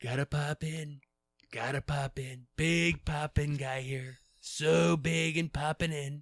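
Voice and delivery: very loud, belted, blustering politician voice. Joking about dropping in uninvited: Donald Trump impression. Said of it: "I do a killer Trump".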